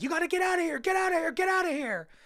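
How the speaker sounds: very high-pitched, loud, urgent, frantic scream. Retelling a movie scene where a stranger warns her: imitating someone screaming. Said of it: "basically screaming at her from the block".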